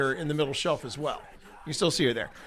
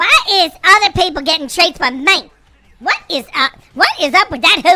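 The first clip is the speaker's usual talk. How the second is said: put-on cat voice, higher and louder; 13 semitones higher, 9 dB louder than usual. Acting out what the cat Evie sounds like: Evie the cat's voice. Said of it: "it sounds like this".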